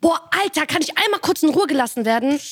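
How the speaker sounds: stressed, fed-up venting. Recalling sitting in their room as a stressed seventh grader: retelling a stressed outburst. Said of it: "Und ich war gerade so gestresst".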